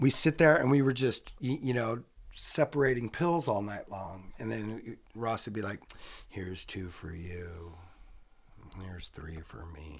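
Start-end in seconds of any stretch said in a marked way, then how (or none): 6.3-10.0 flat droning murmur, very low and soft. Retelling how a friend handed out pills all night: imitating Ross in a monotone. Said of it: "It's all monotone?".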